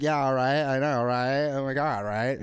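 put-on annoying girly chattering voice. Describing women the speaker won't talk to, imitating their annoying voice. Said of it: "that real annoying voice".

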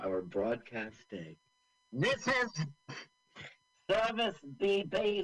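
put-on old-time radio broadcast announcer delivery. Recalling a game they played of announcing broadcasts, in a radio announcer voice. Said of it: "that's more like a radio guy".

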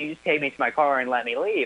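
plain

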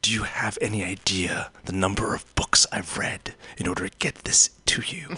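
intense, breathy, gravelly near-whisper. Imitating a history podcaster who boasts about his reading: Dan Carlin gravelly intense voice. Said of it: "he has this kind of gravelly voice where he just gets you intense".

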